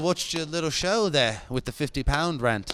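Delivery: bad, poor put-on British accent. Joking with the others about a battle, act out what he would say in a bad British accent. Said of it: "Enough bad British accent".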